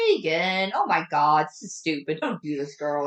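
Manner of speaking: ordinary talk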